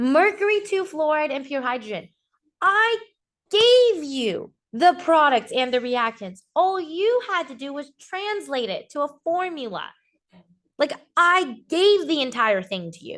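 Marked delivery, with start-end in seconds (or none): 2.6-13.2 slightly fed-up, exasperated, frustrated teacher tone. A teacher going over a chemistry problem with students, frustrated. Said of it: "I'm sorry if I'm sounding a little frustrated".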